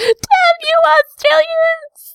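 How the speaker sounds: very high, shrieking, screaming koala voice. Imagining a koala behind a tractor, screaming high koala voice. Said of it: "Screaming in its high koala voice".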